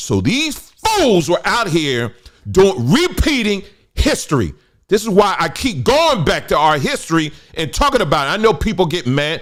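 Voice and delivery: high, loud, heated rant. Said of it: "I'm getting a little heated".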